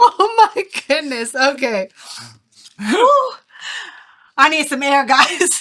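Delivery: crying with laughter while talking. Reacting to another speaker's joke, crying with laughter. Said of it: "I'm crying laughing".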